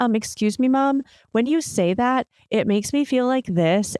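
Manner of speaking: even, polite, regulated voice, kind and calm. A parent imitating an upset kid speaking to mom, in a mock kind, regulated tone. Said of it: "have like this kind, regulated tone".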